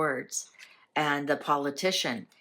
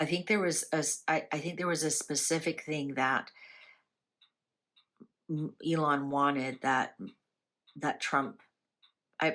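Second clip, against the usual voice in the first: stuttering, stammering speech. Mid-sentence, the speaker loses the thread, stuttering. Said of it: "I'm stuttering here".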